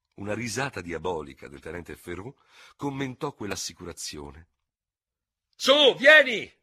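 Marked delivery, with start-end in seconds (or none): 5.6-6.4 very loud, very high, shrill foot-stamping shout. Lieutenant Ferrou calls Lieutenant D'Hubert to follow him, yelling and stamping his feet. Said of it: "urlò pestando i piedi".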